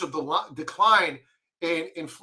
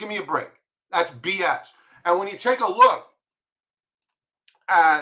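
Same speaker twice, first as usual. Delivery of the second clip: full-on, loud, ranting yelling; 3 dB louder than usual. Speaker disputing official claims about interest rates, yelling. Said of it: "I'm yelling, I apologize".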